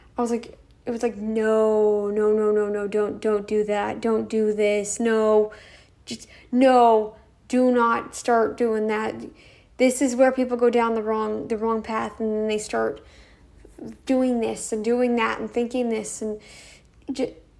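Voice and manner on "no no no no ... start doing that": put-on fearful, pleading tone. Retelling a comment left on another channel: imitating fearful pleading. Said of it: "I meant it out of almost a fear".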